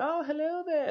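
very high, sweet, friendly little granny voice. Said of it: "very nice, very friendly".

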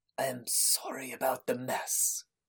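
worn, haggard, hushed whisper. Narrator voices an old man apologizing for the mess, haggard voice. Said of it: "comes a haggard voice".

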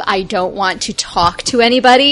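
ordinary talk

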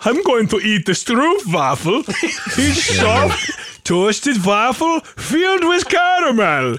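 fake German accent, pitched high. Reading the stroopwafel package aloud, put-on German accent. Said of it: "gotta read it in a fucking German accent".

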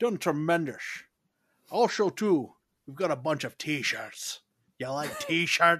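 accidental, put-on Irish accent. Pitching t-shirts to listeners, accidentally slipping into an irish accent.

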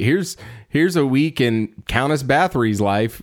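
ordinary talk, nothing marked

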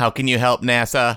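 mock robotic, robot-like line delivery. Imitating a movie line that sounds like talking to a robot: robot-like delivery. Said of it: "It's like when you talk to a robot, you become a robot".

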